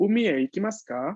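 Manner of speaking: rising pitch on final ka. Lesson comparing question intonation with Spanish: rising pitch on final ka. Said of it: "se utiliza un tono ascendiente".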